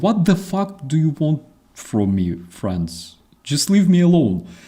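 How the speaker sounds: suspicious, fed-up, wary, hostile farm pig voice. Retelling how a pig eyed the men coming to catch it: imitating a suspicious pig. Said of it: "Pig looks at them suspiciously like".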